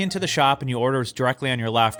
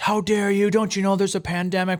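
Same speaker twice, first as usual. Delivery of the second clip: put-on acted, high-pitched, yelled telling-off in older man voice; 7 semitones higher than usual. Retelling how two older gentlemen at a coffee shop yelled: imitating men yelling. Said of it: "they just started yelling at us".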